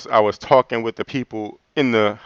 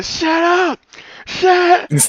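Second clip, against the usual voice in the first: mock yelling, much higher pitch, slower pace. Telling how Sean tried to quiet a crowd all talking at once, imitating Sean yelling. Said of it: "Sean just yelling and screaming".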